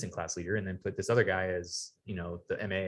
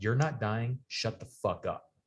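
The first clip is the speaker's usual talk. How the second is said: mock-barked, harsh put-on tone; 3 semitones higher than usual. Recounting being shoved into the ground by a man, the speaker retells a harsh command. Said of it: "shoves me in the ground and goes".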